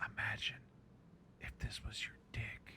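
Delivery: breathy close-mic ASMR whisper. Recounting what she said into the microphone before biting a pickle, imitating a whisper. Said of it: "she whispers in the microphone".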